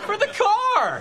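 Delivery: shouting.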